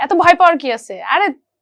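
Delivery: loud, high-pitched, encouraging tone. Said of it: "ইজি করে দেয় যে".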